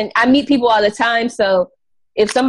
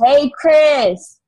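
put-on mild, light, acted girl voice calling; 3 semitones higher than usual. Retelling a story where a girl called out a name: imitating a girl yelling out. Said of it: "so the girl yells out".

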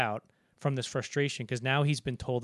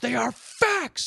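mock sudden angry outburst, raised and rough; 12 semitones higher, 6 dB louder than usual. Retelling a prison argument in a movie: imitating Lancaster lashing out. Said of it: "Lancaster just lashes out and goes".

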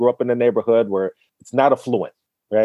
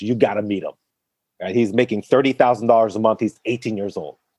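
ordinary delivery

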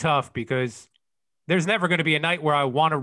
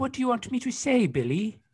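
put-on high, small, childlike kid voice; 8 semitones higher, 3 dB quieter than usual. Asked to do the kid's voice again, replying to the asker in a kid's voice. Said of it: "can you do that kid's voice".

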